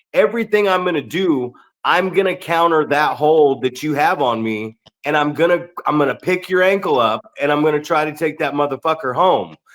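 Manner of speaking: ordinary delivery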